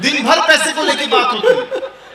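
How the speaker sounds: laughing.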